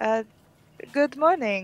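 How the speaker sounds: put-on spoken with Slavic accent. Voicing Rivia coming downstairs and greeting everyone: Rivia's Slavic accent. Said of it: "I have this accent for Rivia".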